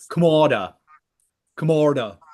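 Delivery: British-style anglicized pronunciation. Repeating a player's name after being asked: British pronunciation. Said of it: "let me put it into the Amer-, the, the British side".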